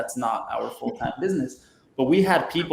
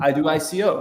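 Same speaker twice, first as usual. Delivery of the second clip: put-on thick foreign accent, broken, halting English; 4 semitones higher than usual. Retelling a would-be title sponsor's reply, in a heavy accent. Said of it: "in some heavy accent".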